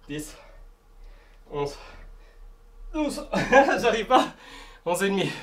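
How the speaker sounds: struggling effortfully. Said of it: "C'est trop dur".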